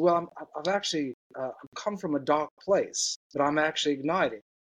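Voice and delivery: clumsy, bad put-on South African accent. Speaker quoting a man with a South African accent, in a bad South African accent. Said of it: "That was a really bad accent".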